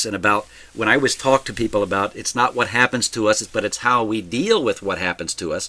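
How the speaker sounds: plain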